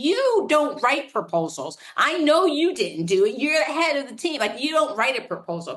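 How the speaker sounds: put-on frustrated scolding. Retelling the CEO's reply: imitating the CEO getting louder and frustrated. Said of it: "he got louder and more frustrated".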